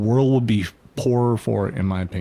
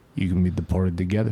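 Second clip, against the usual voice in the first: put-on New York accent, lower; 3 semitones lower than usual. Imitating a man from New York the speakers admire, New York accent. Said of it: "because he's New York".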